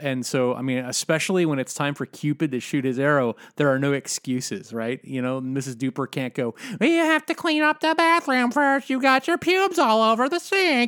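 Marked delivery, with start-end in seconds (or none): 6.8-10.9 falsetto, very high-pitched voice. Imitating Missus Duper complaining about the bathroom: imitating Missus Duper. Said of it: "that was a really good impression".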